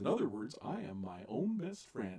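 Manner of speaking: soft, goofy cartoon dog voice. Telling co-speakers what someone said about Goofy being a man-dog hybrid, in a Goofy voice. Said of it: "in Goofy's voice".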